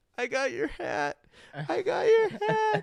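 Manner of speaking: very high, loud, drawn-out crying and blubbering whine. Retelling a man bleeding after a punch to the face: imitating Jake crying. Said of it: "crying, going".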